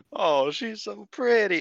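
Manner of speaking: high, slow, gushing coo. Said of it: "I, I simped".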